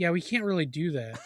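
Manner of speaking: casual, unbothered, nonchalant, offhand brush-off tone. Retelling a film's customer service phone call: imitating a nonchalant customer service agent. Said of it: "He's so nonchalant".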